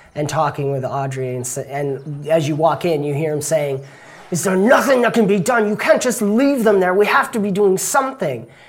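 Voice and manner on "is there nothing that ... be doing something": very upset, barely held-back shout, pitched up. Voicing an upset townsman pleading with the sergeant: upset, holding back a shout. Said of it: "kind of trying not to shout, but he's very upset".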